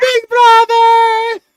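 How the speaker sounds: high, squeaky voice. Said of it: "Rumi's just Mort now".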